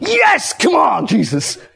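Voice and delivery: very drawn-out, eager, high, swooping enthusiasm. Listing tones for answering what the Lord asks: an enthusiastic one. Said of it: "maybe it's an enthusiastic".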